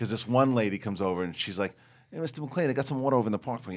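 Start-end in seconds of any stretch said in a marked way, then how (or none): 2.1-3.8 put-on local New York accent, pitched up. Retelling what a local extra said when she came over, in a New York accent. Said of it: "like real or real like locals from New York".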